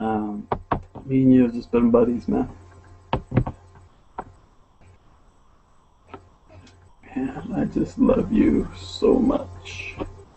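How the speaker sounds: speaking through tears. A parent telling their child how much they love them, crying while talking. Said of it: "I'm crying".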